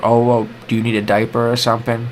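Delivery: ordinary delivery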